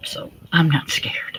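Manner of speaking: hushed whisper. She answers after nearly thirty-eight years in the family, whispered. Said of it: "Notice how she said it in a whisper".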